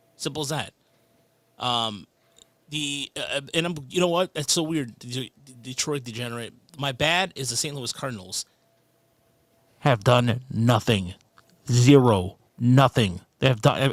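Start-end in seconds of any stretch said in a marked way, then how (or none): 6.8-13.9 very loud, disappointed, let-down grumble. Complaining about the Saint Louis Cardinals, in a disappointed voice. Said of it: "It's my disappointed voice".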